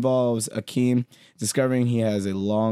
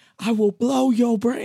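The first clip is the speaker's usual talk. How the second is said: very high, shrill, threatening holler; 13 semitones higher, 4 dB louder than usual. Retelling a movie scene where a thief robs a restaurant: imitating a robber yelling. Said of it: "Why are you yelling?".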